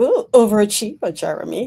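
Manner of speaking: loud, mock-impressed, teasing tone.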